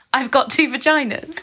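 screaming, high, drawn-out shout. Recalling being put on loudspeaker in a pub, retelling a shout. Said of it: "And I shouted".

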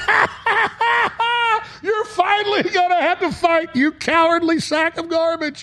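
mock very high, slow, jeering laugh-talk. Retelling a scene where the war hero hands over a grenade launcher, acting out Steiner's mocking laugh. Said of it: "starts laughing at him, going".

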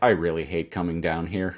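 mock defeated, resigned tone, not freaking out. Retelling a woman's reaction after a needle sticks her shoulder, imitating a defeated tone. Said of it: "Like doesn't freak out".

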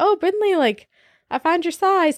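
put-on playful teasing. Retelling a joke the speaker once made to her, retelling a joking remark. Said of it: "And like just jokingly".

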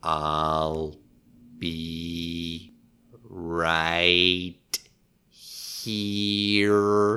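low, hushed alien voice, "be" drawn out. Correcting another speaker's impression, showing how it goes in an E.T. voice. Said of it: "The voice was terrible. It's more like".

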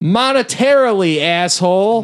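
put-on odd, weird Brooklyn accent, pitched way up. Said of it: "weird Brooklyn accent this whole time".

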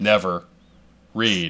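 slow delivery with each word set apart. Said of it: "Never read the comments".

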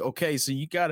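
broad put-on Kentucky accent, pitched high. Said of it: "he's got a very Kentucky accent".

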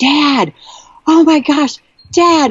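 very high, stretched-out, drawn-out calling yell. Retelling running with arms in the air, yelling at dad. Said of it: "I was yelling at him".

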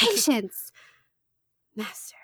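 subdued, held-back, low-key delivery. Recapping a show scene, quoting a character's reply to his apprentice, very quietly. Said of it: "He says it really quietly".

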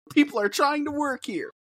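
acted-out harsh yell, pitched way up, very high and screechy. Retelling how he berated the talent in his office, imitate Tony Khan screaming. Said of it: "he's screaming at them".

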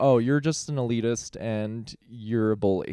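ordinary talk, nothing marked

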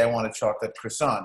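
ordinary talk

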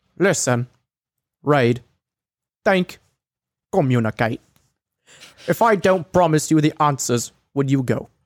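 put-on British accent. Reading aloud an online message, ending it in a Michael Caine voice. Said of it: "I went a little Michael Caine at the end there".

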